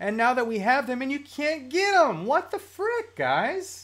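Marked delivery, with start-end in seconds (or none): 2.3-3.2 very high-pitched, emotional, exasperated outburst. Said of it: "I got a little emotional there".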